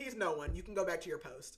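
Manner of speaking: normal talking voice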